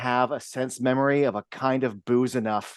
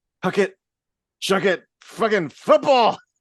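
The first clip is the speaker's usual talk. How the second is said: put-on drunk voice, higher and louder; 8 semitones higher, 5 dB louder than usual. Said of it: "It's that good of a delivery".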